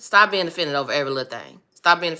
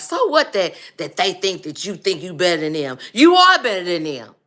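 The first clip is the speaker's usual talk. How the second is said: put-on aggressive tone. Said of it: "my daddy was a very aggressive man".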